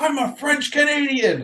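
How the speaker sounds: put-on very high screaming. Retelling the character's reply from the movie: imitating a character screaming back. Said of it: "And he screams back".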